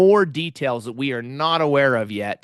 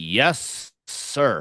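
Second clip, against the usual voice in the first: put-on grudging, standoffish, sarcastic tone; 2 semitones lower than usual. Recapping a tense ready-room exchange, sarcastic Riker 'Yes, sir'. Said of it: "like this really sarcastic".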